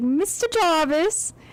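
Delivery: put-on casual, relaxed British accent. Saying a name someone says all the time, in a British accent. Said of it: "there's one thing I can say in a British accent".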